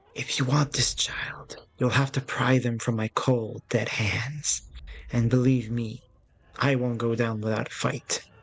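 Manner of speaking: menacing, threatening, projected stage whisper. Narrator voices her threat to the player, in a menacing whisper. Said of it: "her voice a menacing whisper".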